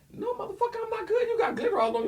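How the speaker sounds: furious, angry, very high-pitched voice. Acting out a partner who sees glitter on them: acting out an angry partner. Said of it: "you the mad person".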